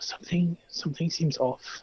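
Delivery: hushed whisper. Whispering in character to Sybil while hanging back: whispering in character. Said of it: "I'm gonna whisper to Sybil".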